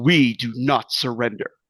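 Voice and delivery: booming voice landing heavy like a hammer. Game master voicing the Mad Queen across the bridge and town, booming Mad Queen voice. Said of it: "her voice booms across the bridge and across Freeburg. It's a hammer".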